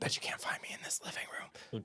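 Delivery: hushed, soft, breathy whisper, barely voiced. Imitating an older woman in real estate videos, hiding behind a curtain: imitating a whisper. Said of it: "one older woman who, like, whispers".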